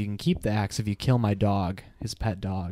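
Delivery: ordinary delivery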